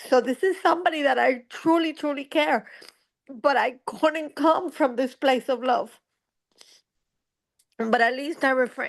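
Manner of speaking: speaking through tears. Talking about a dear friend who stood by her as her mom died, crying while talking. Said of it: "And I'm sorry that I'm crying".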